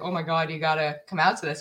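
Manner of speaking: usual speaking voice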